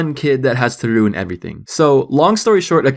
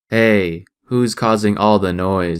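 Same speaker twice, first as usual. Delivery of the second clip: low, flat, toneless, level monotone; 4 semitones lower than usual. Retelling someone asking a bunch of noisy young kids who did it: monotone. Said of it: "Still monotone".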